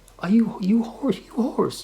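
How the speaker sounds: bad put-on Beijing accent. Speaker imitates someone, then apologizes for it: horrible beijing accent impression. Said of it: "I love the Beijing accent".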